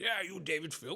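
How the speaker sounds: put-on posh accent. Retelling a surprise phone call from a caller asking for him: posh english voice. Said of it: "a very posh Englishman picked up and goes".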